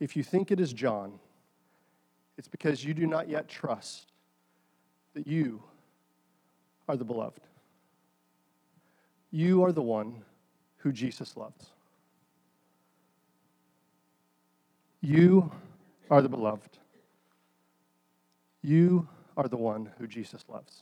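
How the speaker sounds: acted soft, gentle tone. Retelling the priest's reply to the speaker, in a gentle voice. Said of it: "in a gentle voice".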